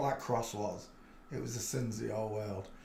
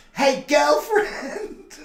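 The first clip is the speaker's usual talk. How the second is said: very high, shrill, very loud, squeaky put-on helium voice; 11 dB louder than usual. Acting out someone mincing up to god, helium voice. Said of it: "with a helium voice".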